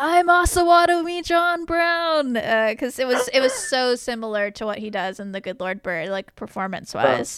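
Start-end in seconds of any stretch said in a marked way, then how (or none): 0.0-2.4 slow, drawn-out, high, proclaiming shout. Retelling what the speaker yelled while watching: retelling own yell. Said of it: "I just started yelling, like".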